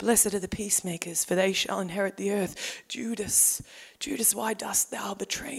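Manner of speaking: gentle, meek voice, low, soft and hushed. Describing how old Hollywood films showed Jesus: gentle Hollywood Jesus voice. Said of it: "talked like this".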